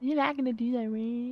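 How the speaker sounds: mocking, small, little put-on voice. Mimicking the voice another speaker just used: imitating a put-on little voice. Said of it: "that voice".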